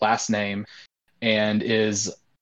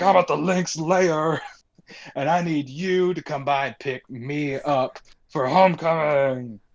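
fake drunk voice, pitched up; 6 semitones higher than usual. Retelling a friend's phone call, imitating Pope's fake drunk voice. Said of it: "just a sterling performance".

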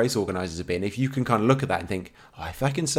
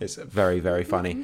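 normal talking voice

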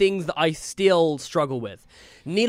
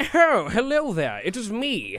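posh, sing-song, hoity-toity voice; 3 semitones higher than usual. Game master shows an NPC greeting the players, hoity-toity posh NPC voice. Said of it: "hoity-toity posh mayor of the town".

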